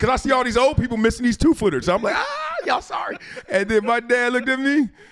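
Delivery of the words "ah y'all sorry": shrill, very high taunting yell. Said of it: "screaming, yelling".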